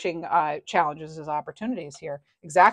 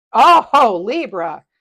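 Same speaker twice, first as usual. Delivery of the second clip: very loud, high, ear-ringing shout; 4 semitones higher, 9 dB louder than usual. Doing a quick tarot reading for a listener and drawing a card, yelling. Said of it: "Sorry for yelling in your ear".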